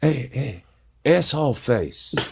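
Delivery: stage half-whisper, hushed and taunting. Retelling calling out to a guy from behind while filming: retelling a half-whisper. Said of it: "I'm whispering".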